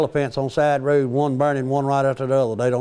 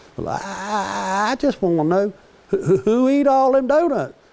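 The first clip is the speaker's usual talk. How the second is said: put-on high, halting, stuttering little boy voice, drawn-out "I"; 7 semitones higher than usual. Retelling his son asking who ate all the donuts, imitating his son stuttering. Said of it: "he kind of stutters a little bit".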